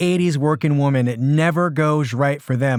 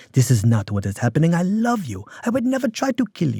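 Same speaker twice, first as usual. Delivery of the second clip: put-on French accent, male voice. Retelling a film husband calming his wife: imitating Charles Boyer's character. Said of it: "And he's like".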